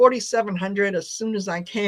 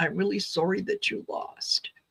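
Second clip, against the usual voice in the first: put-on very shaky, trembling, soft little-boy voice; 6 dB quieter than usual. Retelling what a little boy in a video said: imitating a boy's shaky voice. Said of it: "in a very shaky voice".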